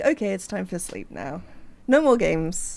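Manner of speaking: normal talking voice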